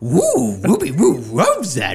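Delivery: loud, high, bouncy, swooping cartoon dog voice. Rating another person's Gollum impression, giving the rating in a Scooby-Doo voice. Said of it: "I'll give you my Scooby-Doo rating".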